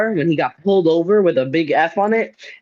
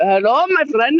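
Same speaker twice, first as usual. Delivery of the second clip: imitated Indian accent, higher pitch; 8 semitones higher than usual. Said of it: "He does it Indian".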